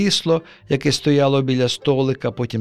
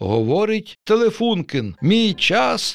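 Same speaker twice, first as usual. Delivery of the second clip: pitched-up on-air radio announcer voice; 8 semitones higher than usual. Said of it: "дикторським голосом заговорив радіоприймач".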